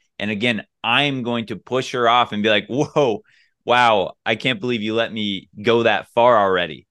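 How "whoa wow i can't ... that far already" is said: put-on laughing while talking. Acting out pushing a date away while kissing: retelling a line said laughing. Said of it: "I'm laughing when I'm saying that".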